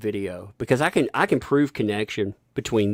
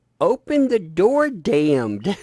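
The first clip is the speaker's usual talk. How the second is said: mock very high, drawn-out, slow little-kid holler; 10 semitones higher, 4 dB louder than usual. Speaker retells a two-year-old yelling from downstairs: imitating a toddler yelling. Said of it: "She's yelling".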